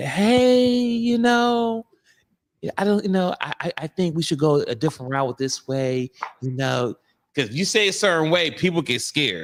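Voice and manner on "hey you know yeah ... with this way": light, high, overly careful voice. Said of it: "you gotta be".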